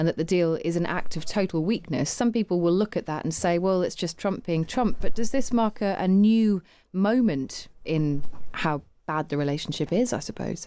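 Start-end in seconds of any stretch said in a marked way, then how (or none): none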